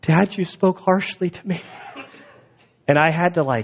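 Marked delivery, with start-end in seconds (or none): 0.0-1.6 high, sobbing crying voice. A father retells his daughter's reaction after he spoke harshly, imitating Grace crying. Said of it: "crying like".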